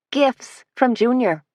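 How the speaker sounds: forced, casual, offhand, slightly high. A woman tells the others who gave her the gifts, trying to sound offhand. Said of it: "trying to sound off-handed".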